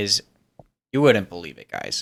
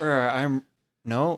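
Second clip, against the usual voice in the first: ordinary delivery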